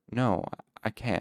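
stuttering. Narrator reads the storyteller refusing a farmer's offer, stammering. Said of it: "I stammered".

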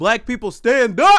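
full-throated, rising, very loud yell. Signing off a podcast episode to the audience, yelling. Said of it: "I'm sorry for yelling".

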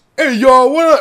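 bad put-on voice, very high and loud, belted. Retelling a TV scene where a character tries Obama: imitating a bad Obama impression. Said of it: "And then she starts talking like that".

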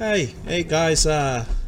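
high, loud, bright, friendly calling out.

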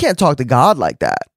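stern, disapproving objecting tone. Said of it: "some of you might think".

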